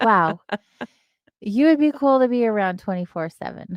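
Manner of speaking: put-on, dry, sarcastic, faux praising tone. Retelling a past reaction to some people, sarcastic. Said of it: "I was also being sarcastic".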